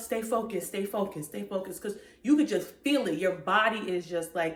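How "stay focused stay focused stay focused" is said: ordinary talk, nothing marked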